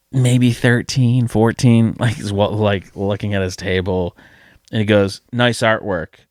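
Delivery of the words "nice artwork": imitated sarcastic tone. Retelling what a young kid said at a convention table: imitating a sarcastic remark. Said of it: "And I mean that sarcastically".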